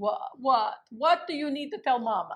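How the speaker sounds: put-on thick Italian accent. Retelling her mother's reply as she comes out to her; heavy Italian accent. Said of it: "my mother had a very heavy Italian accent".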